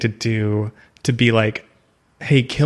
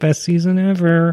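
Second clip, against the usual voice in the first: higher, forced delivery through clenched teeth; 7 semitones higher than usual. Mimicking actors asked on red carpets about the last season, talking through teeth. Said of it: "through their teeth".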